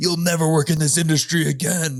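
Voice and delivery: mock big-shot voice, booming it out. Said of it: "like, some fucking big film producer".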